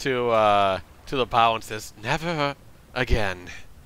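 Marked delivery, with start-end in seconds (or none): 2.0-3.5 low mutter, mumbled under the breath. Voicing a character at the ship's bow after breakfast: muttering to himself. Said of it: "just kinda mutters, mutters it to himself".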